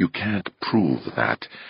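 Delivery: menacing, murderously low voice. Challenging Archer, a woman answers in a murderously low voice. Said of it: "her voice murderously low".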